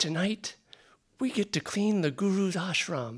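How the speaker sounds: mock breathless, joyful, gushing excitement, high-pitched. Acting out what she would say to the group, feigned breathless excitement. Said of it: "she would say it with such excitement and joy".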